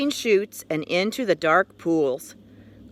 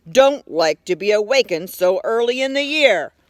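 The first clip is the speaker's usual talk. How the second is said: gruff, growling bear voice; 4 dB louder than usual. Narrating a bear speaking to a little frog, growling. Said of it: "he growled".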